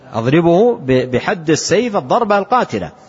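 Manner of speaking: ordinary delivery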